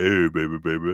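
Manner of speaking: voice dropped to a very deep, low pitch.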